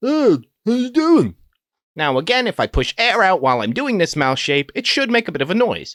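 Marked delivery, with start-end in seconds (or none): 0.0-1.3 echoey hollow tunnel voice, loud and high. Demonstrating a mouth shape for a voice technique: echoey tunnel voice. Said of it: "That echo that happens when you talk like that".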